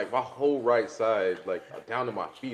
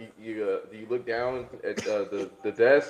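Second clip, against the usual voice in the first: usual speaking voice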